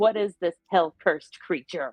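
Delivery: words growled out. A creature hisses at her and she answers, growling back. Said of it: "she just sort of growls back and says".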